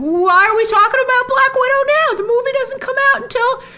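impatient voice.

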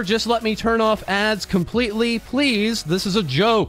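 ordinary talk

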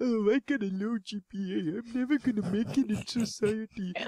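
woe-is-me complaining. Imitating students complaining about low grades: imitating complaining students. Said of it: "everyone was complaining about their G P As".

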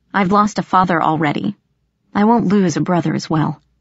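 plain

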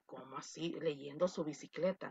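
low, soft, confused and puzzled mutter.

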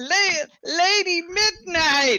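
very high shriek with a tripping start. Playing a character calling out to a lady in the game: shrieking out a name. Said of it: "I shriek out".

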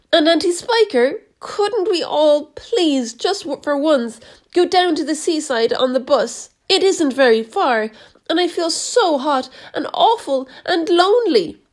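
high, pleading cry. James to Aunt Sponge and Aunt Spiker, crying out. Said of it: "James cried out".

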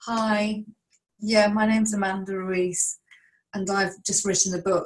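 meek, timid, hesitant and unconfident delivery. Showing how not to sound when pitching a book to journalists: unconfident. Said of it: "you need to be confident ... If you speak like this".

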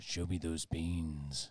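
very low, slow put-on voice. Saying a catchphrase in a put-on voice: Duke Nukem voice. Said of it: "your Duke Nukem voice?".

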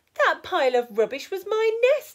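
very high, shrill, loud, sharp snappish retort. Dora the duck to Rupert after his tidying, snapping. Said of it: "she snapped".

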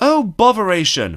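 high, huffy, put-out exclamation. An engine arriving quietly with a friend speaks, flouncing in a huff. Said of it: "flounced Pip".

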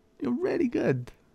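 very high, patronizing, talking-down voice. Echoing the other speaker's imagined compliment back at them, mock-patronizing. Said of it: "That is so patronizing".

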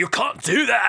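put-on very high American accent slipping into British. Retelling two people trying to sound american, imitating one: american accent slipping into british. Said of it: "slipping into the British territory".

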